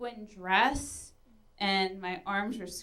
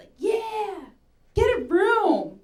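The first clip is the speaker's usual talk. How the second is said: put-on shrill, very slow, loud, drawn-out jeering yell; 10 semitones higher, 6 dB louder than usual. Retelling a story where passersby shout at a couple: imitating people yelling. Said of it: "all these people are just yelling at us".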